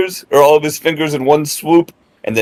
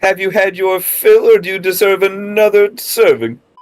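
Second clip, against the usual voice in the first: goading, taunting, jeering tone; 4 semitones higher than usual. Player in a tabletop combat turn shouting at the wounded enemy again, shouting at an opponent. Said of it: "I'm gonna shout at him again".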